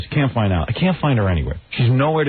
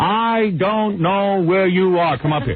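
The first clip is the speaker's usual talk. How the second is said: put-on high, drawn-out screaming call; 5 semitones higher than usual. Retelling calling for his wife over the intercom: imitating own screaming. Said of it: "now I'm screaming over the intercom".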